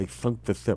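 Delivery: put-on lisp. Joking that the words come out with a lisp: put-on lisp. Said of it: "'Cause you have a lisp".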